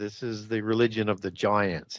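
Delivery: ordinary talk, nothing marked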